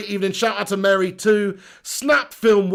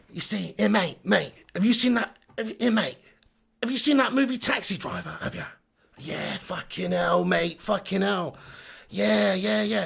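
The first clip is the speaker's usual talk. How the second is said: put-on old geezer voice, quieter; 6 dB quieter than usual. Asking a mate whether he has seen Taxi Driver, in a proper geezer voice. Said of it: "speak like you're a proper fucking geezer".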